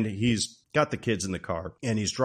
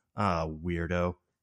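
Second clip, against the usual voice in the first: subtle, low muttered aside under the breath; 5 semitones lower, 6 dB quieter than usual. Retelling a movie scene, quoting a lady walking past: imitating muttering under breath. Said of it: "really subtle under her breath".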